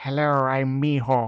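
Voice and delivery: put-on Transylvanian-sounding accent. Imitating a show character who sounds like he's from Transylvania. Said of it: "He sounds like he's from Transylvania".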